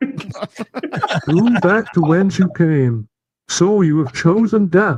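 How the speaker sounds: very high felt-puppet cartoon frog voice. A voice bit announced as an impression, Kermit the Frog voice. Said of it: "when I'm doing an impression of Kermit".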